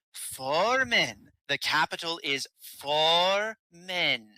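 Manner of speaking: very slow, deliberate, drawn-out pronouncement. A game master voicing a woman answering a player, very slow tone. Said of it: "speaking with a very slow tone".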